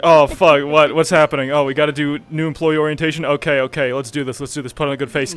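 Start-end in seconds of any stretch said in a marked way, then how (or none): none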